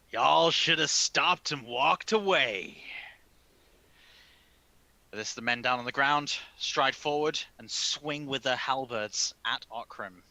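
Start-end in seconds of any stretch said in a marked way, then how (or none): 0.1-2.8 loud yelled line. Voicing a captor holding a knife to a hostage's neck: yelling out. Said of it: "he yells out".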